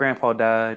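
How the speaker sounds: utterly unbothered, casual, nonchalant, offhand delivery. Retelling what Azula first says, imitating a nonchalant delivery. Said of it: "she says it in the most nonchalant way".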